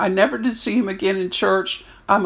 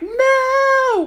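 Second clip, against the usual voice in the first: very high, stretched-out, drawn-out scream; 3 dB louder than usual. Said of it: "I'm screaming like".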